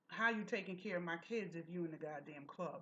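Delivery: deep, manly man's voice. Retelling a phone call picked up at a party: imitating a manly voice. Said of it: "in a manly voice".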